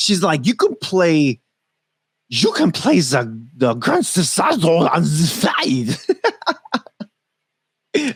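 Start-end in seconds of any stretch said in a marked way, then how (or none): 0.5-6.0 bad, slowed-down put-on German accent. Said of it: "That was a horrible impersonation of a German accent right there".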